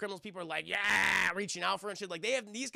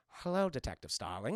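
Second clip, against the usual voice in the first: extra creepy voice, creepiness laid on thick; 7 semitones lower than usual. Retelling a scene where Lecter greets Starling: creepy Hannibal Lecter voice. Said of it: "I'm gonna be all extra creepy for her".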